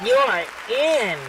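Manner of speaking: coy, flirtatious cartoon-style voice. Asked how SpongeBob would say it, the speaker performs it: put-on flirty SpongeBob voice. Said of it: "How would SpongeBob say it in that flirty voice?".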